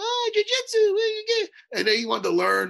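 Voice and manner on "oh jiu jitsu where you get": put-on very high, squeaky little kid voice. Speaker recalling a young kid at his academy asking about jiu-jitsu, imitating Magno's squeaky voice. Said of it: "Little squeaky voice".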